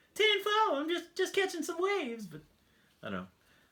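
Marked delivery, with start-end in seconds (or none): 0.2-2.3 put-on very high cartoon kid voice. Acting out a surfer-dude guy from the CB radio: Cleveland's kid impression. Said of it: "sound like Cleveland's kid from the Cleveland show".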